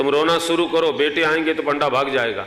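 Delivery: ordinary talk, nothing marked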